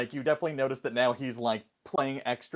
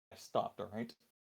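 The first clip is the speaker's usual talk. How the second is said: muttered quietly, lower and quieter; 5 semitones lower, 14 dB quieter than usual. Voicing a character who gives a look: quiet, under his breath. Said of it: "Real quiet under his breath".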